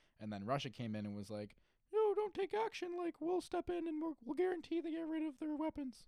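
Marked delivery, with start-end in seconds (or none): 1.9-6.1 very high-pitched, loud, raised, pushy voice. Retelling how Russia answered the U.S. over Assad's weapons, do a high-pitched Putin impression. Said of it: "I don't know why I went high pitched".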